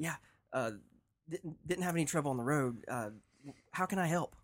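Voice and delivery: very nervous, fidgety. A player's character answers a high cleric at a temple, super nervous and fidgety. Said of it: "super nervous, super fidgety".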